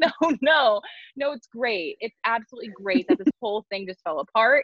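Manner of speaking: forced, fake cheerful brightness, laughing through the words. Imitating own habit of forcing joy when things fall apart: fake laughing while talking. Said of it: "I will say it like that".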